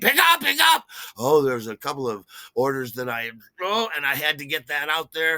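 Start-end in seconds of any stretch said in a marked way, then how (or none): 0.0-0.8 shrill, very high, very loud scream. Retelling a busy restaurant shift, the chef yelling orders: imitating a chef screaming. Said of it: "the chef screams at me".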